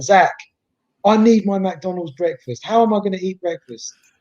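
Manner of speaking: stern, insistent voice. Retelling a friend's voice note demanding breakfast: imitating Claude's stern voice note. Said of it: "a really stern voice note".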